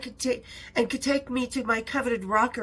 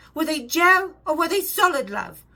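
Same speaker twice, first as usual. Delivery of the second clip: tiny, high, raised English voice; 5 semitones higher, 6 dB louder than usual. Retelling a phone call from Sharon Osbourne: imitating Sharon Osbourne's English voice. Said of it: "a tiny little English voice".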